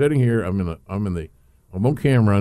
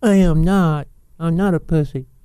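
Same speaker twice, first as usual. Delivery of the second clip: put-on squeaky, tiny, very high baby voice; 9 semitones higher, 4 dB louder than usual. Quoting a man's reply after being called lazy, in a little baby voice. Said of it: "in a little baby voice".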